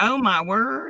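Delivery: mixed Southern and country accent. Talking to another speaker in her true voice: southern country accent. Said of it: "That is my true voice right there".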